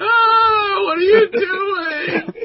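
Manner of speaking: very high, very loud, slow, shrill drawn-out scream. Voicing a shot character who falls near the exit: screaming. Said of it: "and starts screaming".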